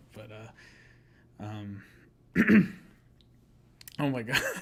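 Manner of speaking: loud, very slow, caught-in-the-throat choking. Talking about an artist's work, the speaker gets something caught in the throat. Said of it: "something in my throat".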